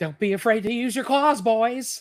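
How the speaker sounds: high-pitched animated cartoon rat voice. Showing the others how the cartoon bad guy talks: Templeton the rat voice. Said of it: "how does he talk? It's like".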